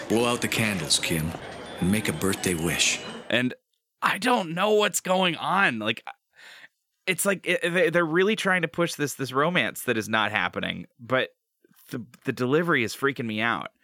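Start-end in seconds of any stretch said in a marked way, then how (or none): 0.1-3.0 weird sultry dad voice. Retelling Jack leaning in over the birthday cake candles; Jack's sultry dad voice. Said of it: "in this weird sultry dad voice he leans in and he's like".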